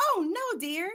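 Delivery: high, swooping, animated cartoon-film style voice. Speaker imagines what she could have said to the waiting kids, in her Disney voice. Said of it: "said in her Disney voice".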